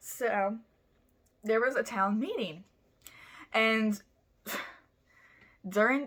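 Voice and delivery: words breaking into giggles, talking through laughter. Telling a story and breaking into laughter: laughing while talking. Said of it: "I'm sorry, I'm laughing".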